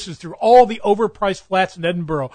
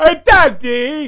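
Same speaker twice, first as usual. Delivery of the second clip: high, loud overgrown cartoon baby voice; 6 semitones higher, 5 dB louder than usual. Telling how you always felt like a freak, call out to Daddy in a Baby Huey voice. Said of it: "I felt like Baby Huey".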